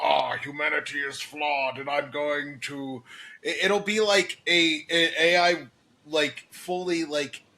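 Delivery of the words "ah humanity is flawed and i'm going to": put-on menacing robot voice. Imagining an AI waking up like Ultron: imitating Ultron. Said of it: "like Ultron, going like".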